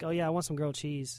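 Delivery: fast, quick, rattled-off words run together. Showing how they order grilled cheese out loud, said fast. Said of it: "if I say it fast, like".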